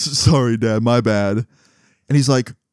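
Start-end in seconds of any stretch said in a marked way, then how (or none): 0.0-1.4 put-on giggly voice. Retelling a friend's apology to his dad: imitating someone giggling. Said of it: "starts giggling".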